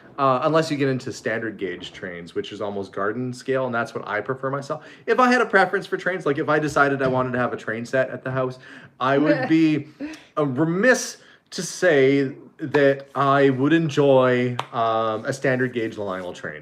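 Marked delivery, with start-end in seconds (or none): none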